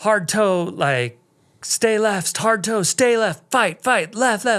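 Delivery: frantic, urgent, high-pitched screaming. Retelling a slide, reenacting screaming at someone over the radio. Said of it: "I'm just like screaming at Jamie on the radio".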